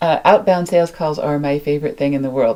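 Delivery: ordinary delivery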